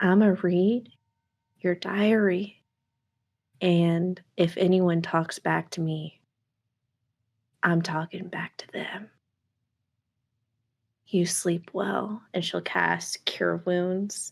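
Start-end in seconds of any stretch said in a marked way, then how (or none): 0.0-12.2 quiet whisper. Voicing a character who leans close to a healed ally: whispering in someone's ear. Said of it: "whisper in Linnell's ear".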